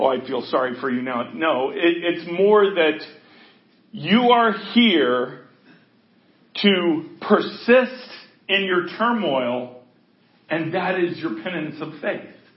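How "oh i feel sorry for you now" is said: low, fast facetious mock pity. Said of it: "I'm being facetious".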